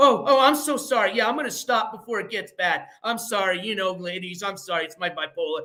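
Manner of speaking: mocking put-on parody voice. Imitating how someone apologizes after doxing people: mocking imitation of someone apologizing. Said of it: "And then he does his, you know".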